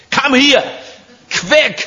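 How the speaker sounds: very high, harsh, barked movie-soldier voice. Showing different kinds of voice, the harsh one from German Nazi movies. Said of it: "there is a harsh voice which you see from the German Nazi movies".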